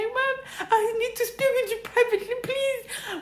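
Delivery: tearful pleading, acted. Retelling asking mom for a private talk: retelling a tearful plea. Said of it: "With tears in my eyes".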